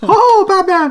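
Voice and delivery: very high, loud, squeaky cartoon mouse voice. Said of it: "like a Mickey Mouse voice".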